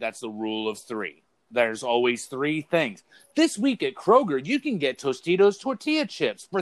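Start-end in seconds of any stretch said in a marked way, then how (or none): 3.3-6.6 upbeat, energetic announcer voice, very high and swooping. Showing how a Kroger weekly ad sounds; energetic Kroger ad voice. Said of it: "it's like there's energy to it".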